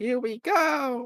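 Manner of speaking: very high voice like a Japanese dub. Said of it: "the Japanese version, which sounds different".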